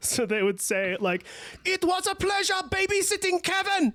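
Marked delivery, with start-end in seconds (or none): 1.6-3.9 put-on high-pitched shout in a German accent. Describing a comedy sketch and quoting one of its lines: shouted Germans Who Say Nice Things bit. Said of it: "shout nice things in a German accent".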